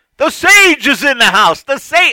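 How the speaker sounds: loud, big booming bellow, very high-pitched. Recalling a stranger who called out to them on a walk, retelling a big loud bellow. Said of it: "some guy bellows out in a big, loud voice".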